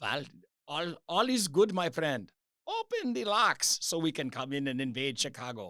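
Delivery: unsure, tentative put-on German accent. Acting out a U-boat captain brought to a Chicago museum, attempted German accent. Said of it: "is that my German accent?".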